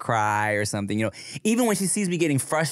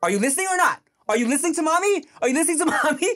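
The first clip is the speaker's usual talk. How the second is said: shrill, high-pitched scolding yell. Retelling how Chia scolds Veda at potty time, imitating Chia yelling. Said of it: "After Chia like yells at her".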